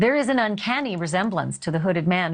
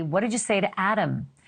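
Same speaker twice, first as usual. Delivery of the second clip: ordinary delivery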